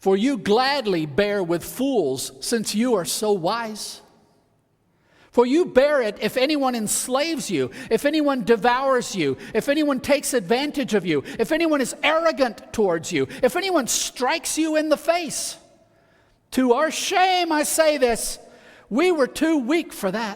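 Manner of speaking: high, sarcastic, ironic reading.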